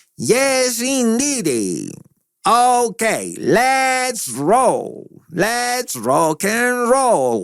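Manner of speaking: very high, slow, swooping, drawn-out voice. Describing Lynch as a curious character, the speaker does a David Lynch impression. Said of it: "este tono de voz que estoy tratando de imitar".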